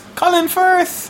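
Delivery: high, thrilled cry.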